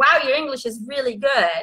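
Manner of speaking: ordinary talk, nothing marked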